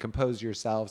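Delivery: ordinary delivery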